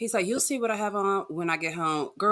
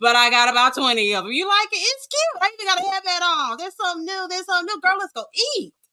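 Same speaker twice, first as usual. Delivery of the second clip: put-on little girl voice, higher and louder; 12 semitones higher, 6 dB louder than usual. Showing another speaker a put-on voice for the character Amira greeting Ayana: Amira voice. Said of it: "you know I have an Amira voice for this".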